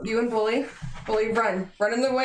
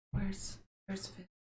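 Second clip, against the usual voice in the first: barely voiced, very soft, hushed whisper; 3 semitones lower, 14 dB quieter than usual. Watching someone eat a dead rabbit, speaking in a quiet whisper. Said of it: "I'm gonna whisper quietly".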